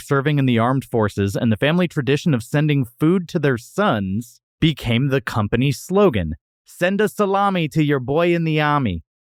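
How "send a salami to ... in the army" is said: put-on New York accent, pitched up. Reading out a company's old slogan so it rhymes, in a New York accent. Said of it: "which is supposed to be read with a New York accent".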